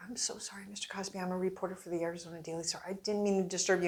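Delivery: quiet, soft, hushed stage whisper under the breath. Retelling an apology half-whispered into a comedian's ear onstage: retelling own half-whisper. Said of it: "I'm whispering in his ear".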